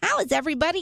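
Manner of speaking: high-pitched, cartoon puppet character voice. Reading a tweet from Elmo's Twitter account, a host says it in Elmo voice. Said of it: "Let me say it like Elmo".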